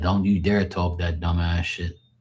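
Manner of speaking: ordinary talk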